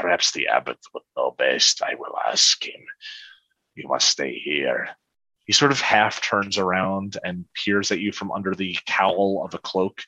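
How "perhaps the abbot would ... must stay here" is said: growling character voice, much lower. Game master voicing a cloaked figure answering the players, weird growl in voice. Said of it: "this weird growl in his voice".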